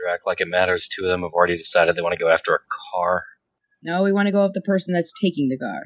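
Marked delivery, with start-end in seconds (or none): 0.0-3.2 jaded, sardonic, very low grumpy grumble. Jaded former corporate wage mage responds to the group, minorly grumpy and jaded. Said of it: "he's kind of had a weird life where he used to be a corpsec wage mage and is now in the shadows. So he's a bit jaded from both, tends to be minorly grumpy, / he's kind of had a weird life where he use".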